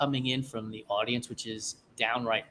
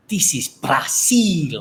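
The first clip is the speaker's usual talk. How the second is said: put-on loud, in an unusual accent; 4 semitones higher, 10 dB louder than usual. Retelling a movie scene, quoting Toretta's weird accent. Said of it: "In this weird-ass accent".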